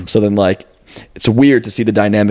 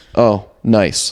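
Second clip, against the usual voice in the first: put-on passive-aggressive voice. Retelling an upset dad's reaction to the wrong hotel: imitating a passive-aggressive dad. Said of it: "the most passive aggressive".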